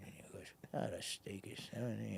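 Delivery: hushed, breathy mumble under the breath. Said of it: "he would mumble your numbers".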